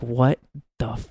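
ordinary talk, nothing marked

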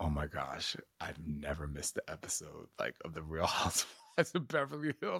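mild, gentle, confiding tone. Retelling what a quiet man said about the show: imitating someone speaking very softly. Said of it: "he says very softly".

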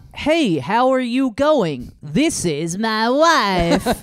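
high, American accent morphing into Kazakh accent. Asked to change the accent in about three steps, speak going from American to Borat. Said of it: "Go from American to Borat".

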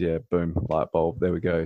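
plain

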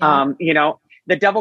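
ordinary delivery

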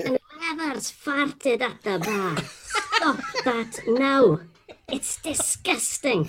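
put-on thick Scottish accent, laid on. Retelling an announcement that came over the intercom, in a broad Scottish accent. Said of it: "broad Scottish accent".

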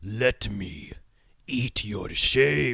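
scary, hulking German man's deepest bass voice. Showing one way to deliver the line, deepest bass scary German voice. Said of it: "a hulking scary german man with the deepest bass voice going".

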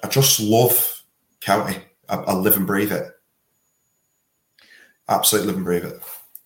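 fast, fervent, passionate, all-in delivery. Telling the hosts they will do any job for the county, passionate. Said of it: "I can hear the passion in your voice".

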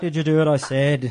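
put-on loud Liverpool accent. Telling a joke, the speaker voices the priest's question in a Liverpool accent. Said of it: "He's a Beatle now. He's from Liverpool".

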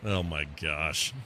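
grossed-out, disgusted exclamation. Reacting to Dragon Ball games shown on screen: disgusted. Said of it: "Was that a "oh my gosh" of disgust?".

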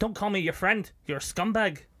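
high, put-on Irish accent. Retelling a man's reply to the speaker's greeting; irish accent. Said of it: "You kind of said that with the accent".

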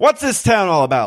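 put-on Mid-Atlantic accent. Joking about arriving in Chicago for the show: put-on Mid-Atlantic accent. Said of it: "We're gonna do the entire show in Mid-Atlantic accent".

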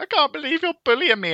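put-on, very high, sobbing, whining crying voice. Acting out what crying people say to you: mock crying. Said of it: "they'll be there like crying".

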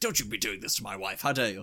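put-on stiff-upper-lip British voice. Describing his film role, act out Keanu Reeves as a stiff-upper-lip British man. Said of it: "the stiff upper lip, kind of like a British man".

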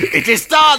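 very loud, shrill and booming shout. Retelling what a magician shouts after each illusion: imitating Quinton shouting. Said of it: "he just shouts".

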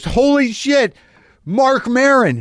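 mock thrilled, lit-up, very high excited outburst. Retelling a man turning around and recognizing him, acting out an excited greeting. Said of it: "And he's just all excited".

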